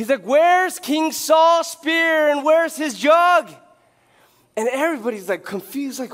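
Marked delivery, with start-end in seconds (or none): 0.2-3.5 acted loud, high, drawn-out shouting. Retelling how David wakes the camp from a hill: imitating David yelling. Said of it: "why is he yelling?".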